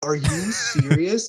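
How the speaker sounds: stunned, paralyzed, frightened, fearful disbelief. Retelling hearing scary news, imitating own past fearful shock. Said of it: "so paralyzed with fear 'cause I was like".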